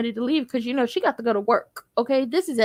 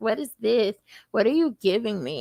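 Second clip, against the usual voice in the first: ungrateful, snotty, snippy, bitchy tone; 2 semitones lower than usual. Retelling a TV scene where a character rejects food: imitating a bitchy tone. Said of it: "Karen is being her normal bitchy self".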